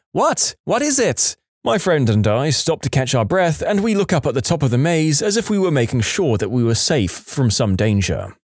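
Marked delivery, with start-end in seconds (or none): 0.1-1.3 high, panicked, freaking out. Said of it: "is freaking out".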